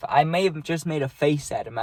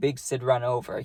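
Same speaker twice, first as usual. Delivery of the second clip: ordinary talk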